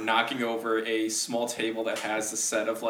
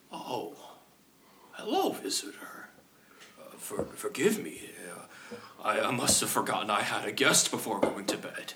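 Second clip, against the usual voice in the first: hushed, breathy, stumbling whispered character voice; 3 dB quieter than usual. Voicing Gargarum, who greets a visitor holding the crown: Gargarum's voice. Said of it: "look at you and go".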